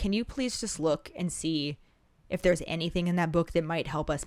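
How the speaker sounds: normal talking voice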